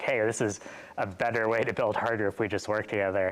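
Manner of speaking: plain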